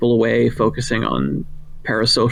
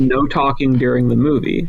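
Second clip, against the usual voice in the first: normal talking voice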